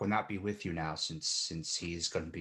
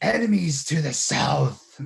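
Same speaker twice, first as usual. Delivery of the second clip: rough, very high, booming, growly shout at full blast; 9 semitones higher, 13 dB louder than usual. Garak casts a spell and warns the caravan, in Garak's booming growly voice. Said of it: "in his his his best growly voice".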